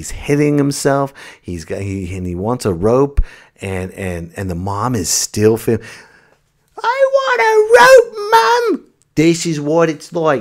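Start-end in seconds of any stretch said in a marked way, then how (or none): 6.8-10.4 poor put-on Australian accent, high and swooping. Acting out a distressed boy speaking to his mom while she films, in a bad Australian accent. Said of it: "I got to work on my Australian accent".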